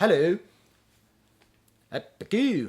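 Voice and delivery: clumsy put-on Scottish accent. Joking about going back to Scotland: bad Scottish accent. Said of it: "that was a bad S-, Scottish accent".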